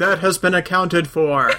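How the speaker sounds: big booming, resounding announcer voice. Retelling a scene where Rimmer is judged on Justice Planet, in a booming voice. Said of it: "A booming voice just says".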